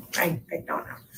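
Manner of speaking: hushed, breathy voice dropped to a whisper. Being questioned with her lawyer present, answering in a lowered voice. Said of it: "Every time she lowers her voice like this".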